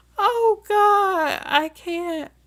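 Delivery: very high, slow, drawn-out giggling speech. Reacting to a listener's comment, laughing while talking. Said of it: "I'm trying not to laugh".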